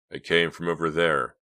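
ordinary delivery

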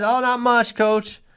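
put-on innocent, sheepish, high-pitched teen boy voice.

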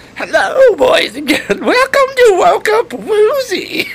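very high, loud, creepy ghoul voice, swinging pitch. Suggesting a voice actor to say something about the show, demonstrate in a Crypt Keeper voice. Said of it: "the guy that did the voice of the Crypt Keeper".

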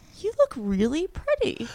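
very high, stunned, shocked disbelief. Retelling how Danny reacted on seeing her dressed up: imitating Danny's shocked tone. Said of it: "really shocked".

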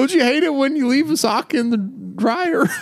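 very high-pitched stand-up comedian voice. Trying to stay in a comedian bit, doing a Jerry Seinfeld impression. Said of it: "I was trying to stay with Seinfeld".

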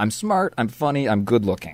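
sure of oneself, confident. Giving the example line used when speaking in front of a room, confident. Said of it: "That sounded confident".

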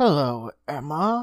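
strange, odd cooing voice. Narrator reads the old doctor blocking a fleeing woman's way, cooed strangely. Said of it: "cooed the old doctor strangely".

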